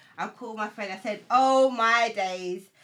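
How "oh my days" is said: loud, slow exclamation. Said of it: "are you talking loud on the phone?".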